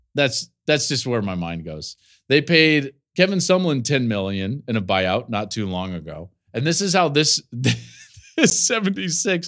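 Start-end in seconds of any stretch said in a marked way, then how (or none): 6.5-9.4 pitched-up talk breaking into laughter. Talking about a seventy-six million dollar buyout, laughing while talking. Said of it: "I don't know why I keep laughing".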